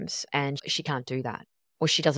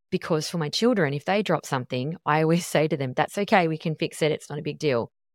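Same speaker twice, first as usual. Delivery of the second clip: ordinary talk, nothing marked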